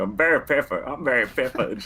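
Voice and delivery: strong, deep put-on Southern accent. Recalling goofing around with an actor: put-on deep Southern accent. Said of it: "we were putting on this deep Southern accent".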